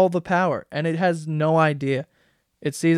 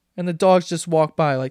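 plain

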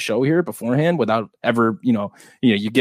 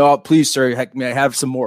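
meek, humble, pleading beggar voice; 2 semitones higher, 3 dB louder than usual. Complaining about giving out winners without thanks: Oliver Twist voice. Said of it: "I'm doing the".

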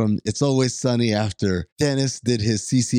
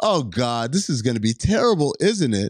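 ordinary talk

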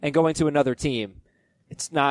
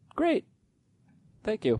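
voice jumps way up, squeaky and high-pitched; 7 semitones higher, 5 dB quieter than usual. Wrapping up a point about a player and thanking them, in a high-pitched voice. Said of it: "in any more of a high-pitched voice".

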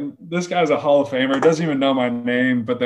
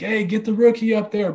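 put-on hollering, high and repeated; 8 semitones higher than usual. Retelling a teammate calling from the back of the room: imitating Miggy yelling. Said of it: "he just keeps yelling like".

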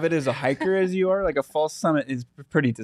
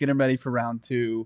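plain

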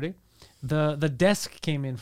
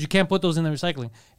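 usual speaking voice

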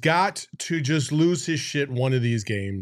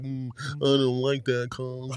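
put-on apathetic voice, quieter; 2 semitones lower, 4 dB quieter than usual. Showing how Monty sounds when apathetic about a call, in a mock-apathetic Monty impression. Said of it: "when he's just kind of like apathetic".

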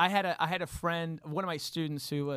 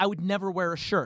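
ordinary delivery

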